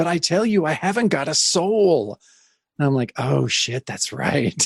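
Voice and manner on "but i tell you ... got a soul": terrified screaming, higher pitch. Speaker reading a scared character's line from a comic, screaming in terror. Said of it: "reminds us she's screaming".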